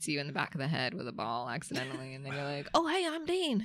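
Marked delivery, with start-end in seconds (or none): 2.7-3.7 put-on Southern accent, pitched very high. Acting out a friend meeting someone: imitating Dean in put-on Southern accent. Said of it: "do you like the accent I gave you?".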